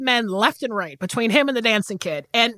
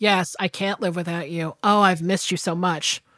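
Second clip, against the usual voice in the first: low, flat, mechanical robotic monotone, dead level; 5 semitones lower, 3 dB quieter than usual. Discussing a film, the speaker mimics Joan Crawford in a scene, robotic delivery. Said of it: "robotically being like".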